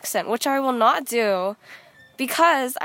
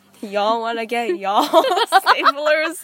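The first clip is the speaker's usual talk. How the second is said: slow, loud Alabama local voice; 5 dB louder than usual. Imitating how people in alabama talk: imitating alabama locals saying y'all. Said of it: "it's like".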